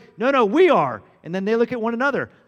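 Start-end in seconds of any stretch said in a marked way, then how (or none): 0.2-1.0 put-on thunderous, booming voice like rolling thunder. Retelling an argument over who is the greatest, James and John, thunderous voice. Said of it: "were speaking in a thunderous voice".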